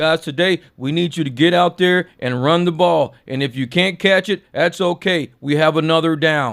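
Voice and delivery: flat, emotionless, robot-like monotone. Speaker demonstrates coaching a team with no emotion, flat emotionless robot-like monotone. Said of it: "He sound like a goddamn robot".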